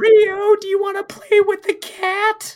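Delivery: bad put-on child voice, very high and loud. Trying out the kid characters' voices, the speaker does a bad kid voice. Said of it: "The kid's voice is so bad".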